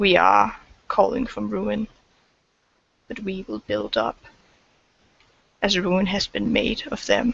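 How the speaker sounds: very serious, grave and earnest. A character in the game addresses Abitax, very serious. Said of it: "Like looking at you very seriously".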